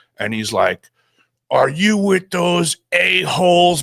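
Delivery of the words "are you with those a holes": high-pitched screaming. Retelling a stranger's confrontation outside a building: imitating someone screaming. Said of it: "He's screaming at me".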